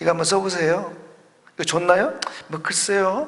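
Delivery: doubtful, half-hearted, hesitant, unconfident delivery. Acting out a salesperson pitching a product, hesitant and unconfident. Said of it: "뭐 이렇게 자신 없게 한다면".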